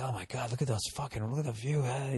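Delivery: barely there, awed, very quiet half-whisper. Retelling looking at a beautiful view on a hike: imitating a half-whisper.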